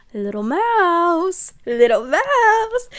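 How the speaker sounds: slow seductive voice. Retelling a book scene where the stalker calls out: imitating a sexy voice. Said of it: "we hear a sexy voice".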